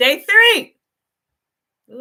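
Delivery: loud, passionate, fired-up shouted outburst. Describing the days of looking at land, yelling passionately. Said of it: "I'm yelling. I'm getting passionate".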